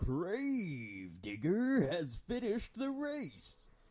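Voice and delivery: very high, swooping call with "grave" drawn out. Retelling what a game's race commentator would say: Macho Man impression. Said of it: "that was a good Macho Man impression".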